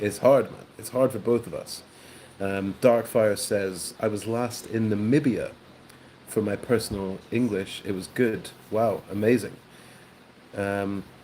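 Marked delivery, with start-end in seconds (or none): none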